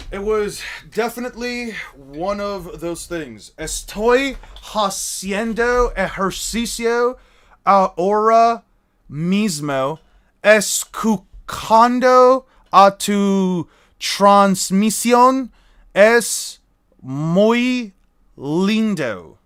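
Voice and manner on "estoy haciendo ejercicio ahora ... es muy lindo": put-on heavy American-accent Spanish, read very slowly.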